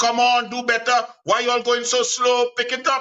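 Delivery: energetic shouting in a coach-like manner. Speaker recreating how they yelled at their athletes during training: retelling own shouting. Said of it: "While I am shouting and screaming".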